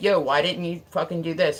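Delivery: ordinary delivery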